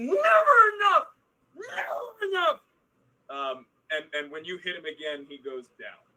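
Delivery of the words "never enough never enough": shrill, high, furious, drawn-out screaming. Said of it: "he just keeps slamming into your face".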